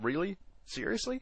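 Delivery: high, incredulous mock disbelief.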